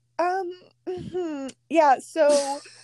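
high, awkward, hesitant hedging voice.

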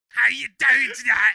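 loud, slow, mock Cockney shout.

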